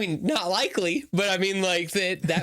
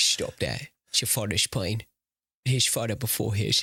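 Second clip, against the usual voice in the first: put-on older English butler voice, pitched lower; 9 semitones lower than usual. Quoting a musical's Alfred, who does Michael Caine: Michael Caine impression. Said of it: "does a really good Michael Caine impression".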